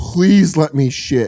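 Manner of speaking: mock pleading, slow and drawn-out begging. Retelling a desperate prayer to God: imitating own begging. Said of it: "like begging to God".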